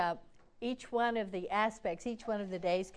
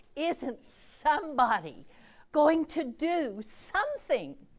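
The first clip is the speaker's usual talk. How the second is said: mock anguished child voice, high and drawn out; 6 semitones higher, 5 dB louder than usual. Retelling a tearful boy's question to the group: imitating a boy's anguish. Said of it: "he said in his anguished voice".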